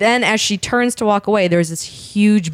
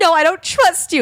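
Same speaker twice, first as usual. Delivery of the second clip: very high, tearful, sobbing voice; 10 semitones higher than usual. Retelling a drunk girl arguing with her boyfriend on the walk home, imitating her sobbing. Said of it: "she's sobbing".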